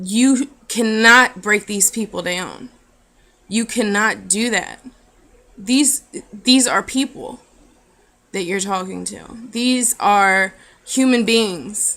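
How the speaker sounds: emotional, choked-up voice, breaking and catching. Speaking to the audience, apologising that he is getting choked up: choked up. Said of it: "I'm getting choked up".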